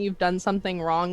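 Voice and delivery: ordinary talk, nothing marked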